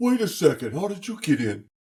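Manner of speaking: high-pitched voice given to a pet. Voicing Clyde surprised that the owner got in: Clyde's voice. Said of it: "that was Clyde's voice. You did well".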